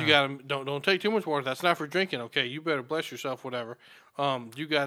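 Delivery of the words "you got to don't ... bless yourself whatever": usual speaking voice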